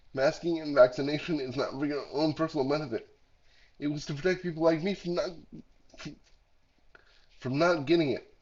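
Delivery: heavily congested, stuffed-up, sick-sounding voice.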